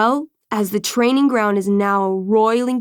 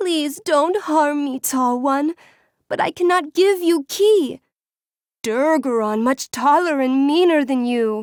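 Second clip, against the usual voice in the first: frightened, pleading, pitched-up dragon creature voice; 5 semitones higher than usual. Game master voicing a dragonkin that pleads with the players, dragonkin pleading. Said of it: "The dragonkin pleads with you".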